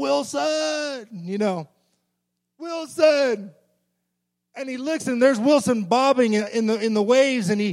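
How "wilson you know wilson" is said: very slow, drawn-out, high calling-out yell. Retelling a story of a dehydrated man on a raft waking up alone, retelling a yell. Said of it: "he yells out".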